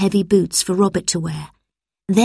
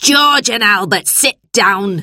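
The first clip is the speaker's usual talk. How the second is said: loud, yelled-out shouting; 4 dB louder than usual. Mrs. bleak addresses george and albert, shouting. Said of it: "shouted Mrs. Bleak".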